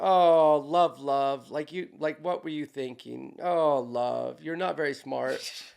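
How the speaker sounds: mock condescending, derogatory tone. Shaking the head at somebody and retelling saying love: imitating a derogatory tone. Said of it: "in kind of a derogatory asshole way".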